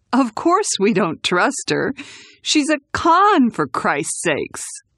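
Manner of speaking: chuckling, high, swooping amusement through the words. Reading a man's reply after he spits out his drink to laugh, chuckling. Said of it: "he chuckled".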